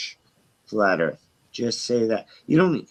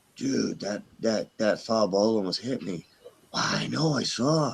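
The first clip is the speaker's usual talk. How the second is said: put-on soft, low-key, hushed stoner murmur, stage whisper; 6 dB quieter than usual. Acting out potheads at a ball game reacting to a foul ball: imitating potheads half-whispering.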